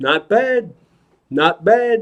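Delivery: slow, drawn-out, threatening put-on voice. Retelling a voice praising the tricks: Robert De Niro impression. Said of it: "That's my Robert De Niro impression".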